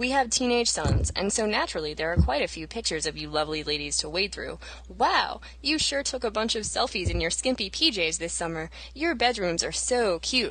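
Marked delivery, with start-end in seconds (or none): 4.9-10.5 mock-condescending, put-on tone. Reading aloud a quote from an original post: mock-condescending reading. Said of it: "incredibly condescendingly".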